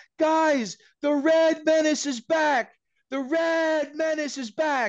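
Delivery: acted child's scream, very high and drawn out. Retelling a kid running through the staging area: imitating a kid screaming.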